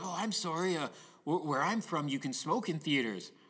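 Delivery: put-on friendly, nice drunk man voice. Imitating a drunk man apologizing for smoking in a theater: imitating a nice drunk man. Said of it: "he's very nice drunk".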